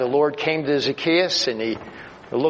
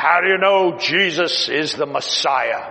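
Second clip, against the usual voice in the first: play-acted menacing, threatening, intimidating voice. A man suddenly challenges the speaker from behind, retelling a loud, threatening voice. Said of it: "Really loud and threatening".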